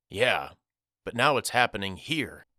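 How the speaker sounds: ordinary delivery, nothing marked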